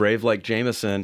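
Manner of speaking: ordinary talk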